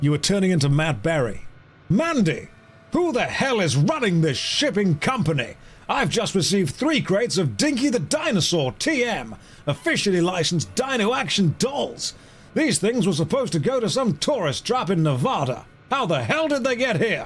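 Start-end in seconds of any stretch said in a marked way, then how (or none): 1.9-17.3 put-on higher, full-on American accent throughout. Voicing a character calling out to Mandy, in a fully American accent. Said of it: "go for a fully American accent".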